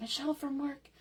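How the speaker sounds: soft, teasing, playful half-whisper. Greeting a viewer after promising not to tell: mock half-whisper. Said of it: "We'll say it very quietly".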